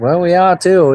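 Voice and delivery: put-on Maine accent. Retelling a talk with his dad in a Maine accent. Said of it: "That's my Maine accent".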